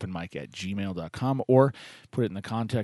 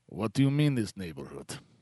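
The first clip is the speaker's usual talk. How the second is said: fake, put-on Russian accent. Retelling his reply to people asking about the neighborhood, in a fake Russian accent. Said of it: "faking a Russian accent".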